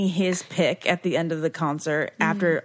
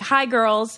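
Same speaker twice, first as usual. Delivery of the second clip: put-on middle-aged man voice, much higher pitched; 3 semitones higher than usual. Reminiscing speaker mimics how Kevin used to greet them, imitating Kevin. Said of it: "Kevin always used to be like".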